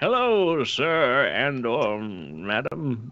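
put-on elderly voice, very slow. Imitating the game's turtle characters voiced by old people: imitating an old person's voice. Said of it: "they use nothing but old people for the voice acting".

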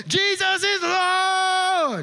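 loud, drawn-out shouting.

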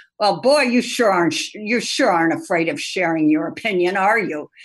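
mock condescending tone. Retelling what the boss's boss said after a meeting: imitating a snide, condescending tone. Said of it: "Most snide, condescending way".

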